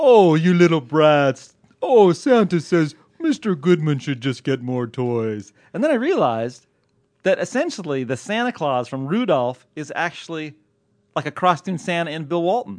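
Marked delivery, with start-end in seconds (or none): 0.0-5.5 slow, loud, drawn-out voice. Doing the Christmas-special voice for his own kids: Rudolph Santa Claus voice. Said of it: "I was doing Santa's voice to my own kids".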